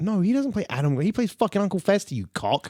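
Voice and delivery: combative, hostile tone. Correcting the other speaker about an actor's role, aggressive. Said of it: "you're so aggressive".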